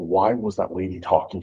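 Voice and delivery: ordinary talk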